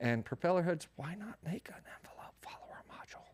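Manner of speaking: soft, breathy whisper, barely voiced. Explaining how to use the sweeper for an envelope follower, whispering. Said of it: "I'm whispering".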